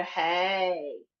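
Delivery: hey in normal speaking voice.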